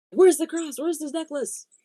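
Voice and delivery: put-on angry tone. Retelling a caller's repeated demand for the cross: imitating someone getting angry. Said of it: "progressively more angry".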